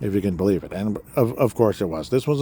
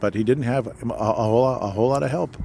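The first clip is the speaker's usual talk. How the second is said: heavy stammering, stumbling and repeating the phrase; 3 semitones higher than usual. Speaker reviewing a basketball game and one player's performance; stammering. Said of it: "Pardon me for stammering".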